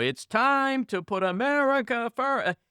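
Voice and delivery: high, very slow, staged, rehearsed speech cadence. Mocking a rehearsed political speech: Kimberly Guilfoyle impression. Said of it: "she's like".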